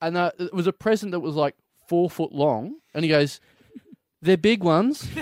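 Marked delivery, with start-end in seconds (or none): 4.2-5.1 put-on toddler voice, like a two-year-old. Retelling a two-year-old handing over a big present, imitating a toddler. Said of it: "because he's like two and a half".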